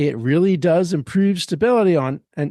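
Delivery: plain reading voice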